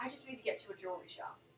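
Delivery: soft, sighing delivery. Narrating a scene as the group heads out, she speaks, sighing. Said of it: "she just sighs and says".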